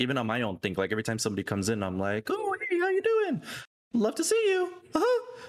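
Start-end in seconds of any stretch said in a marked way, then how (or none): 2.3-5.4 very high, little cartoon mouse voice. Retelling greeting viewers who join the stream: Mickey Mouse voice. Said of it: "you guys only get two Mickey voices".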